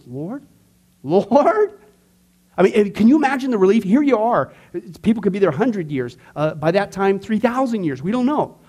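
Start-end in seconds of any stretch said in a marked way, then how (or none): 0.1-1.8 heavy stress on each Lord, said twice. The speaker recalls how McCarthy says the word: McCarthy's emphatic 'Lord'. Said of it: "you put a lot of emphasis on it".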